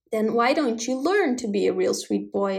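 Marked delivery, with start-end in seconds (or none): none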